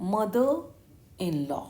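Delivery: heavy stress on mother. English word stress lesson, saying mother in law: stress on mother. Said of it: "मदर पर आपको बोलने में stress लेना है".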